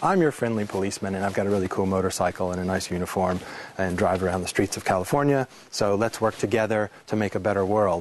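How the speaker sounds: plain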